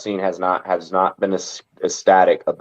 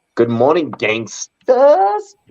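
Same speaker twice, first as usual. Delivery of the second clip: high, sing-song, swinging comedic voice; 8 semitones higher than usual. Greeting listeners before giving a lineup, in a McLovin voice. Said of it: "I so read that in like McVell, uh, a McLovin voice".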